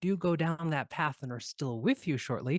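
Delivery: plain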